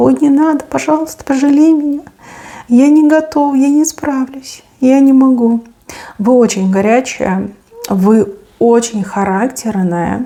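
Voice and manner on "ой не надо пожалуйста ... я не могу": man speaking in a high, squeaky voice. Imitating a man under pressure: imitating a man squeaking quietly. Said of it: "такой пищит там тихонечко".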